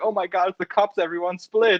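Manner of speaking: put-on high-pitched American accent, teen-movie style. Quoting what characters say in teen movies: imitating an American teen movie. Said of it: "every single, like, American teen movie".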